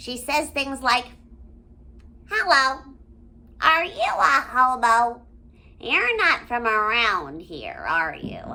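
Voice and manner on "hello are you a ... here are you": loud, scratchy, swooping sarcastic delivery. Speaker describes a favorite cartoon character and quotes her lines: scratchy Vanellope voice. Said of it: "It's kind of scratchy".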